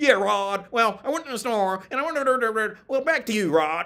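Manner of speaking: very high, very loud newscaster voice. Mimicking how he talked like a news report, imitating a news-reporter voice. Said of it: "he talked like that. He went like".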